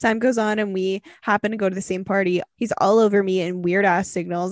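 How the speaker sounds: ordinary delivery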